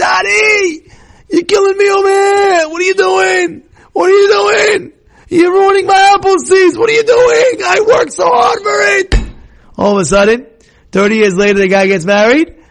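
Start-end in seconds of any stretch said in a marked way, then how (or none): 0.0-9.1 mock screaming with voice pitched way up. Telling a story of a son screaming at his father, imitating a son screaming. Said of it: "the son is screaming at him".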